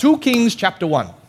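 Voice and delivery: put-on broad Australian accent, laid on very thick. Retelling a speaker at a pastors' conference, imitating John Woodhouse's thick Australian accent. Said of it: "he's a very thick Australian accent".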